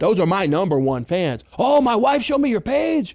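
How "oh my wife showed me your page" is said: higher-pitched, put-on elderly man voice. Quoting a fan whose wife showed him your page: put-on old man voice. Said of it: "Am I doing a good old man voice?".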